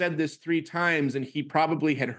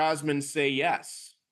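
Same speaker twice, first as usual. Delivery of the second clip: normal talking voice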